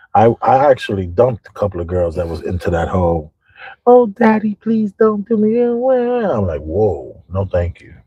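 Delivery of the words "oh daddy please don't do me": squeaky put-on baby talk, very high. Imitating girls the speaker dumped, in a fake baby voice. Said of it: "the baby voice".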